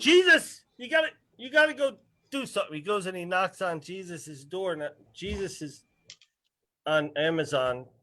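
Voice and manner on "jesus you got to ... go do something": mock very high, shrill hollering call. Acting out God looking down at people: God yelling. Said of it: "He's yelling".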